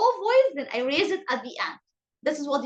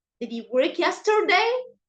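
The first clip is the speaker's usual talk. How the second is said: low start, pitch rising on 'yesterday'; 2 semitones higher, 3 dB louder than usual. Teaching question intonation with an example, starting low and rising at the end. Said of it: "You have to start in a low voice, then you raise it at the end".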